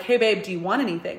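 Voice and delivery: ordinary talk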